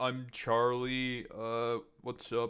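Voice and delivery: incredibly monotone, flat, dead level, no lift. Doing a Charlie impression when told to be Romanian Charlie: Charlie impression. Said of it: "as good of a Charlie impression".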